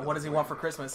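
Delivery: ordinary delivery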